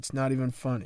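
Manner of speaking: plain reading voice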